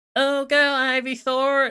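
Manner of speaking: whined out high and loud. Mocking the male Pokemon Trainer's annoying voice in Smash Bros: imitating whiny Pokemon Trainer voice. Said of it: "the male Pokemon Trainer is just like".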